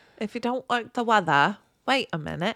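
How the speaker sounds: rough Australian accent. Seeing snow before the podcast, the speaker quips in a kind of Australian accent. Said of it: "With an Australian accent".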